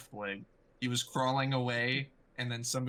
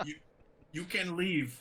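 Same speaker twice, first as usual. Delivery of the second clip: put-on goblin voice, panting and trembling, higher; 6 semitones higher than usual. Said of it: "The goblin is breathing very heavily".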